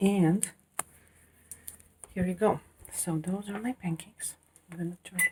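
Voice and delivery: speaking in a whisper. Making pancakes while the household is still asleep, whispering. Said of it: "I'm whispering".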